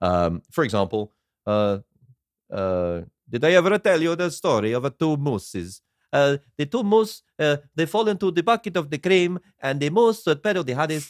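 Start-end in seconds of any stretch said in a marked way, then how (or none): 3.3-11.1 put-on Italian accent, higher. Imitating a film character's rambling monologues: Jared Leto's movie Italian accent. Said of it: "and Jared Leto, who turns up".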